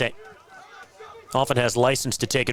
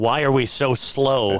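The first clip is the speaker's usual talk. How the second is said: ordinary talk, nothing marked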